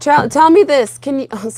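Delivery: voice cracking. Starting to ask the other person something, voice cracking. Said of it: "sorry about my voice cracking".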